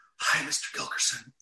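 hushed whisper. Retelling a son's friend greeting him in the hallway; whispering. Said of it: "He says it in this whisper".

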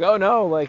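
high, loud, jokingly sarcastic mock despair. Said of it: "with jokingly sarcastic responses".

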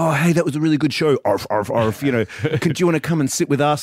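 eager, excited fanboy gushing.

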